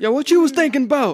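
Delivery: high, megaphone-style shout. Imagining yelling at people through a megaphone: pretend yelling.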